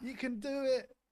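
high, loud, mock rousing pep-talk cheer.

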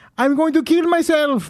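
cartoon-style Mexican accent, pitch very high. Repeating a line to show how it sounds, in a Speedy Gonzalez type accent. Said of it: "Let me do it in the accent".

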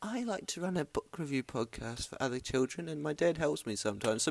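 put-on very soft, hushed, high, cute little-girl voice. Quoting a girl who runs a book review podcast, in a cute little girl voice. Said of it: "she's a cute little girl voice".

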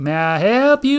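shrill, very high, booming, loud, slow, drawn-out voice. Retelling a barbecue restaurant visit, imitating the woman taking orders. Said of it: "but she just says".

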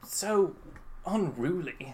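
said softly, full of disgust. Narrating the story as Draco speaks, in a bad Draco impression. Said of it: "That's a really bad Draco".

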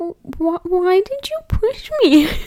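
very high, tearful, stammering, crying voice. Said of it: "And then I started crying".

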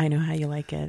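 whispered. Acting out what the other speaker would say: whispering in her ear. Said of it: "You're like whispering in her ear".

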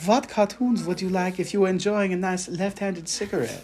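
put-on words read in a German accent. Retelling an email read aloud, speaker quotes the German reader: German accent. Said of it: "he read it with a German accent".

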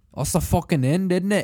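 booming, very loud, put-on Scottish accent. Ending the recording in a new voice as asked: put-on scottish accent. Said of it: "Do, like, a Scottish one".

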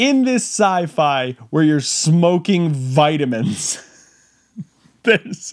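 slow talking, words breaking up with laughter. Describing a made-up sci-fi where people smoke vitamins: laughing while talking. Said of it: "I can't say it without laughing".

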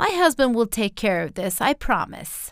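ordinary delivery

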